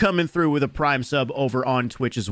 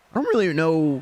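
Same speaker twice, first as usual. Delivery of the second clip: breaking voice, cracking mid-line; 4 semitones higher than usual. Speaker wondering aloud who's meta in this drop, voice cracking. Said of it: "My voice just cracked".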